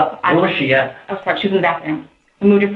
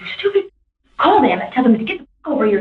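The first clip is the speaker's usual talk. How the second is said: put-on, high-pitched yelling; 6 semitones higher than usual. Telling what a man yelled into his phone from the other room, retelling a shout. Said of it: "he started like shouting".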